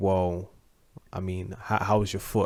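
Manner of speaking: ordinary talk, nothing marked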